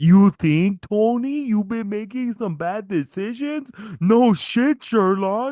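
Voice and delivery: very high, goofy puppet bear voice. Mocking Tony's remark, in a Muppets hat-wearing bear voice. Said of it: "sound like the fucking character from the Muppets, the bear with the hat".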